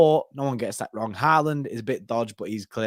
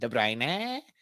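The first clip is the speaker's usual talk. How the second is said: mock wrong pronunciation, quieter; 7 dB quieter than usual. Retelling how the FIFA commentator says the player's name: imitating the FIFA commentator's pronunciation. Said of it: "that's exactly how he says it".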